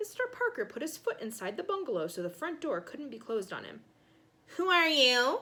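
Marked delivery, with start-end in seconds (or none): 4.6-5.4 high, nasal bark through the nose. Narrator reads Mister Parker at Ben's front door: barked nasally. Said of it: "He barked nasally".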